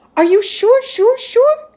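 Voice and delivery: surprised, high, loud. Narrating Amal replying to his mother's suggestion, surprised.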